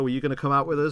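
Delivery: acted teasing tone. Retelling how students tease a teacher in a film: imitating students teasing. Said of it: "they're sort of teasing him".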